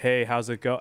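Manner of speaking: flat monotone reading voice. Retelling reading someone's text messages aloud to them: monotone voice. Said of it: "reading their text messages to them in a monotone tone of voice".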